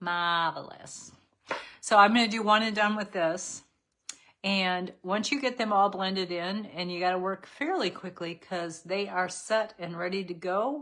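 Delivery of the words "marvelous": put-on New York accent. Saying the name of a makeup shade: new york accent. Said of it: "You gotta talk like you're from New York".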